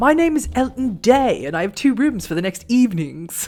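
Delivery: slightly posh put-on British accent. Speaking in character to introduce himself, in a slightly fancier british accent. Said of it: "speaks in a slightly fancier British accent".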